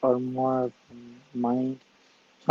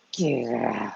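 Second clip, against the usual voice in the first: put-on mean, hostile spirit voice. Retelling what a spirit said to the speaker: imitating a spirit's hostile order. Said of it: "but not in a very nice way".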